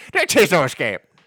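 put-on Irish accent. Joking about an irish version of a tagline: irish accent. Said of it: "or the Irish version".

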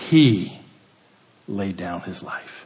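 heavy, hard emphasis on the word "He". Showing how to read a bible verse aloud, with stress on he. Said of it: "He. That's where you put the emphasis".

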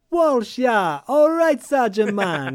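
bad put-on Jamaican accent. Recapping the story, quoting Walsh trying on his terrible Jamaican accent. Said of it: "trying on his terrible Jamaican accent".

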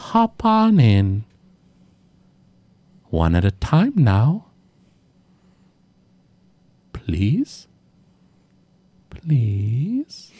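very slow, drawn-out monster voice. Voicing the beaked brain monster inviting the adventurers into its beak: floating brain monster voice. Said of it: "And it opens its beak wide and it goes".

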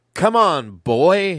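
loud, high-pitched holler. Retelling a wrestler yelling at his opponent: imitating someone yelling. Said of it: "he starts yelling at him".

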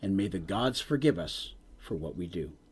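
very deep, hushed stage whisper. Narrating a scene as the dwarves fade away: the Thane's half-whisper. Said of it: "you can hear the great Thane's voice whisper".

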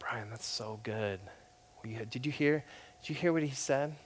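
soft-spoken, hushed, admiring voice. Retelling how a professor praised an answer at lunch: soft voice imitating Chris Wright. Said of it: "he had this soft voice".

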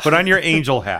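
very loud, high yell over everyone. Talking over another speaker who asks for help: yelling into the microphone. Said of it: "don't yell in the microphone".

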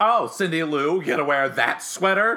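loud, snooty, sassy, condescending tone. Quoting the Grinch's line to Cindy Lou: sassy Grinch voice.

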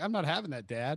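ordinary delivery

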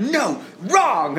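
high, loud, sharp scolding yell.

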